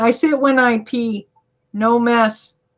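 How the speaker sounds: ordinary talk, nothing marked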